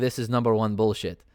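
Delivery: ordinary talk, nothing marked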